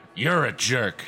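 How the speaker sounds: deep growl from the throat. The dummy Mr. Wood rasps in Kris's face as she reaches for him, low throaty growl. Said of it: "he rasped in Kris's face, speaking in a low, throaty growl".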